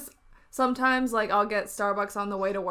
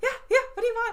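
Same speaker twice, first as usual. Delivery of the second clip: high, dog-like voice through laughter. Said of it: "like a dog".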